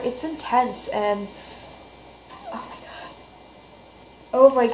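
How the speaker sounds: overwhelmed, on the verge of crying. Speaker describes reading a first chapter, near tears. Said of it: "I'm gonna cry".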